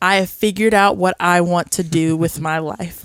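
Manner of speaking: put-on over-dramatic delivery. Retelling a Gilmore Girls scene about wanting to drum: dramatic imitation of Lane. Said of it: "it's so dramatic".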